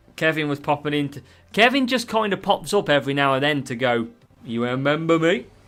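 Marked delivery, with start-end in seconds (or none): 4.5-5.4 put-on Danish accent. Acting out Kevin popping up every now and then, imitating Kevin's Danish accent. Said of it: "in a Danish accent".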